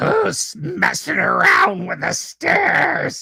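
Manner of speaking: very high, creaky, rasping, hideous monster voice. Game narrator voicing someone heard from back there: hideous voice. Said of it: "you hear this hideous voice".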